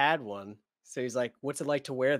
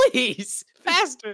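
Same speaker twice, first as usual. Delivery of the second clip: put-on frantic, panicked voice, very high and loud; 12 semitones higher, 6 dB louder than usual. Retelling a panicking character's words: imitating a panicked plea. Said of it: "He's panicking".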